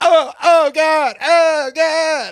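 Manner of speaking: very high, drawn-out mock moans. Imitating a woman faking enjoyment in bed: imitating fake moaning. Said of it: "the fake, like, a woman getting jackhammered and going".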